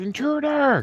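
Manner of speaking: very high, shrill, alarmed yell. Game master voicing the guard as the player gets out the window, guard yelling. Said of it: "the guard yells".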